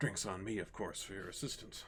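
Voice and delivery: whispered aside. Voicing Durnan leaning toward the group, offering drinks: whispering as Durnan. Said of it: "kind of whispers".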